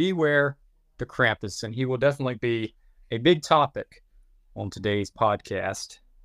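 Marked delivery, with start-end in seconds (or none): none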